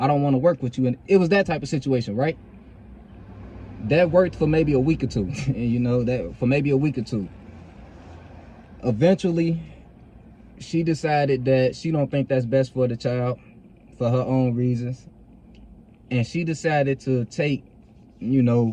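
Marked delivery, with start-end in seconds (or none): 8.8-18.7 emotional, halting, stop-start delivery with pauses. Telling listeners about a personal situation involving a child, getting a little emotional. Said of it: "I'm getting a little emotional".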